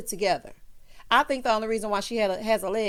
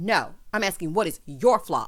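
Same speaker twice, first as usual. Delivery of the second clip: stress on YOUR, pressed low and firm. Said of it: "She said".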